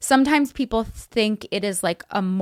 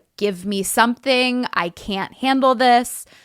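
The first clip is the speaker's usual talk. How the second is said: put-on tearful, crying, begging voice, higher; 4 semitones higher than usual. Retelling begging for Tylenol while in pain: retelling a crying plea. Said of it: "I was crying, begging to get Tylenol".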